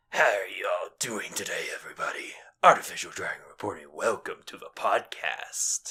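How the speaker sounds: deep, breathy, whispered artificial dragon voice. Asked what the dragon would sound like, trying a deeper artificial dragon voice. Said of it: "get into my deeper artificial dragon voice".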